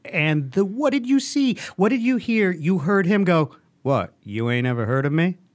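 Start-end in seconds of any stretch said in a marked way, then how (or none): 3.8-5.3 smooth, easy, effortless voice. Mocking a movie teaser's line, imitating the Genie's smooth voice. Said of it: "He's got a smooth genie voice".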